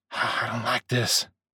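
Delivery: slow, hushed whisper under the breath. A narrator reads a man stepping backwards, whispering. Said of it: "he whispered".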